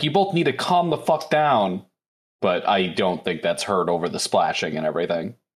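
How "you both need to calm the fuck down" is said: high-pitched, shouted delivery. Voicing a character calming two others, shouting a command. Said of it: "when she shouts it".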